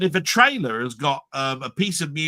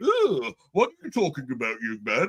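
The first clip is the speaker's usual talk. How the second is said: put-on posh old English voice. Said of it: "do English sort of like".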